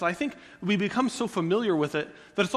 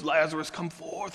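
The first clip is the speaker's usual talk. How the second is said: deep, gravelly action-hero voice, larger than life; 4 semitones lower than usual. Retelling a Bible scene the way he pictures it, in a really gravelly Jesus voice. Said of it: "this really gravelly voice".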